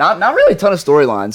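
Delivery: cracking, breaking voice. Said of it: "was that a voice crack?".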